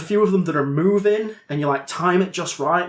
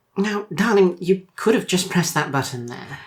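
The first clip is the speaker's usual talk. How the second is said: ghostly female character voice. Voicing a ghost who appears beside the player: ghost woman character voice. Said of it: "there is a ghost beside you. And she says".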